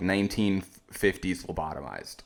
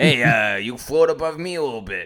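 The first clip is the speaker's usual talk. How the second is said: put-on voice, higher and louder; 4 semitones higher, 5 dB louder than usual. Imitating a Mario who catcalls the princess: catcalling Mario. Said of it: "a Mario that would, like, catcall the princess".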